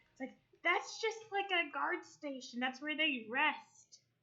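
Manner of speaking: put-on kobold whisper. The kobold comes over and whispers to the party so the goblin won't know: Meepo whispering. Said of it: "like a fucking kobold, / [name] pulls out his dagger".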